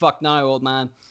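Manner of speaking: ordinary delivery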